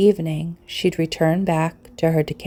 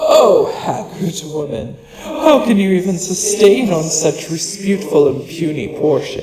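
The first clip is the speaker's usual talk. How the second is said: louder, menacing, mocking growling beast voice; 4 dB louder than usual. A great beast mocks a haggard old woman, questioning how she survives on so little, in a growling, mocking manner. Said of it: "O great beast ... The cat's laugh was growling".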